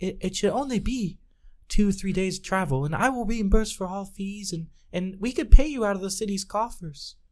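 very high, confiding, confidential tone. A character asks the group to escort a merchant to the next city, in a hushed tone. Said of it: "In her hushed tone".

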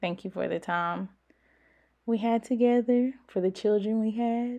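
close to crying, emotional, teary voice. Thanking her ex-husband in a message for their time together: about to cry. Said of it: "I'm gonna cry".

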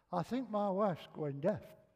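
plain

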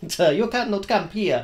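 bad, fake, put-on Spanish accent. Imagining a port official telling him he can't camp, in a bad Spanish accent. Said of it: "I don't do a Spanish accent well".

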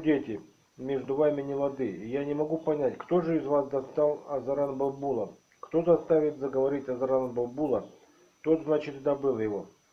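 plain reading voice

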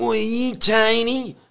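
very high, slow voice, tiny stretched out. Retelling how a drug dealer approached when their car broke down, imitating the dealer's voice. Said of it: "had that kind of voice like this".

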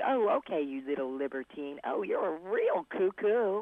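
light, slow, playful, joking put-on teasing. Retelling teasing remarks made while a sister read a biography: retelling playful teasing. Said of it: "I'm just teasing him".

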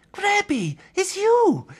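very high, loud, sudden gasped-out cry. A spider finds someone he knows trapped inside a bag: gasping. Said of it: "gasped Terry".

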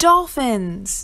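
yelling out loud.

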